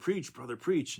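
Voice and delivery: mock call-and-response cry, kept light and restrained. Retelling a deacon's cry during the sermon: imitating a deacon yelling. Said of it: "One of the deacons yelled".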